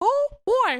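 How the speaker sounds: very high, loud, squeaky mouse voice. Asked for a funny voice and made to repeat it, Mickey impression. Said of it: "Give me Mickey one more time".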